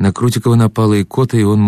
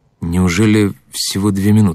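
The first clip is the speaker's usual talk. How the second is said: ordinary delivery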